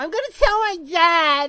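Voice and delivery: put-on high, girly valley-girl schoolgirl voice. Playing a schoolgirl who insists on her name: girly schoolgirl voice. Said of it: "I'm gonna hear that voice in my nightmares".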